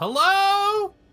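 very loud, very high, booming, shrill, drawn-out yell. Shouting a greeting into an empty ruined hall: booming magical yell. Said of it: "I'm just gonna yell".

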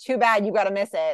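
ordinary talk, nothing marked

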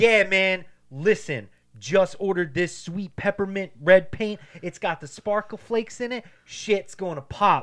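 stiff, wooden delivery. Acting out the show's paint guy describing the paint: imitating scripted reality TV dialogue. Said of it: "talking just like that".

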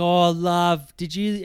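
slow, high, drawn-out, friendly bogan lady voice. Retelling what a friendly lady at the shops said: imitating a bogan lady. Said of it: "she's kind of bogan".

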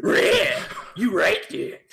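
loud talking cartoon dog voice. Doing a requested Scooby and Shaggy bit, the speaker answers as Scooby-Doo: Scooby-Doo voice. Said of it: "requested the Scooby and Shaggy impression".

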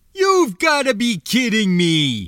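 bellowing at a very high pitch, booming. A narrator reads the pilot's line, bellowing. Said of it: "the pilot bellowed".

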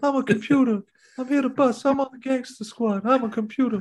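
way up into falsetto. Answering a request to do the podcast in Ryan Gosling's high falsetto. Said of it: "do this pod in Ryan Gosling's high falsetto".

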